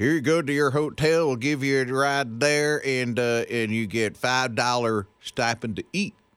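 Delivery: put-on Detroit accent. Radio host retells what he was told when stranded in Detroit, Detroit accent. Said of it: "That Detroit accent you got, you nailed it".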